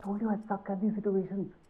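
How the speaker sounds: panicked, freaking-out voice. A character on a call urges the other to hurry, freaking out. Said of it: "I'm seriously freaking out".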